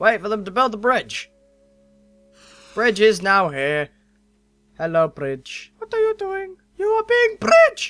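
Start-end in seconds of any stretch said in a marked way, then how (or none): 4.8-7.9 very high, swooping, sing-song golem creature voice. Voicing the golem while a bridge appears, in an imagined golem voice. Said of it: "That's how I imagine the golem speaks".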